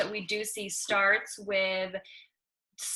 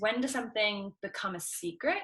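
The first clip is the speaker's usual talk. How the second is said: ordinary talk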